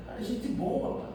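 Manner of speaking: soft, breathless whispered voice.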